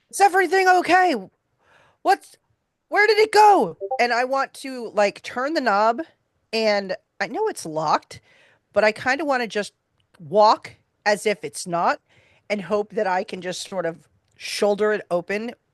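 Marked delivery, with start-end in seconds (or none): 0.2-3.8 very high, loud yelling, swinging up and down. Calling out in character while crossing the foyer to a locked door: shouting.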